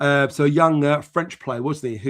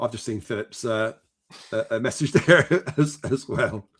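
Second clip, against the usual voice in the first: words broken up, spoken through laughter; 4 semitones lower than usual. Reading a message during a chat: laughing while talking. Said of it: "I'm laughing".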